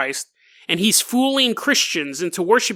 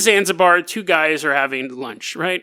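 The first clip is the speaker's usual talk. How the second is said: normal talking voice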